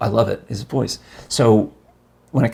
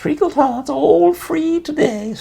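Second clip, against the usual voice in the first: oily villain voice, much higher. Speaker demonstrates the voice chosen for a character, oily Child Catcher voice. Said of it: "I'm trying to go with oily".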